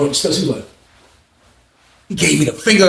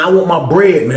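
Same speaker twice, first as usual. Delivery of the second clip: plain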